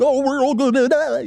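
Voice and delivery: mock frantic, very high scared cartoon panic voice. Retelling a cartoon scene, voicing a frightened Shaggy. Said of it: "Shaggy over here being him fried himself like".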